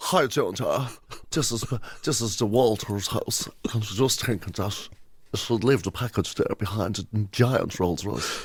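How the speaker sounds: Southside Dublin telephone voice. Making a mock audition tape, doing a Southside Dublin telephone voice. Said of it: "That sounded like somebody's telephone voice".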